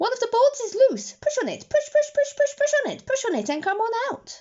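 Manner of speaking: very high, rapid, rattled-off goose voice. Reading a story aloud, voicing the goose: talking rather fast. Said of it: "who talked rather fast".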